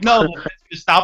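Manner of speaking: put-on yelling.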